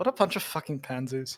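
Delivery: low, muttered whisper under the breath. Voicing Ava muttering about the townsfolk: whispering under breath. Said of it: "whispering under her breath".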